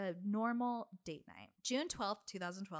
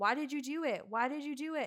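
put-on, high-pitched screaming, repeated; 5 semitones higher, 4 dB louder than usual. Retelling a stabbing scene, imitating Robert screaming a repeated question. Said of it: "he's screaming".

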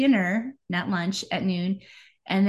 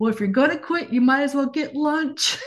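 put-on raised, pitched-up yell; 6 semitones higher, 4 dB louder than usual. Retelling what her husband yelled after she quit, retelling a yell. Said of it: "my husband yells".

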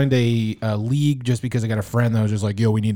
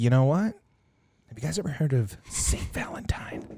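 mock spooky, hushed, ominous boogeyman whisper; 2 semitones higher, 8 dB quieter than usual. Imagining office workers talking, the speaker voices them: mock-ominous boogeyman tone. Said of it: "Why does he say it like it's a boogeyman?".

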